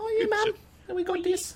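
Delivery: put-on very high-pitched little-kid voice. After being asked about it, the speaker goes on in his child voice. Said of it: "That's my child voice".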